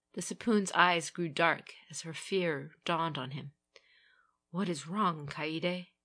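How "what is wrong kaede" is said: spoken in a whisper. The Sapoon, seeing Kaede's fear, asks her a question, whispered. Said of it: "he whispered".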